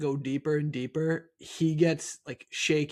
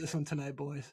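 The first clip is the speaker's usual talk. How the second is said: mock-nervous shaky voice, quieter; 9 dB quieter than usual. Imagining a sweating coach before a game, imitating a shaking voice. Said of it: "Voice is shaking".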